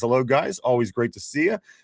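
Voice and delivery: ordinary talk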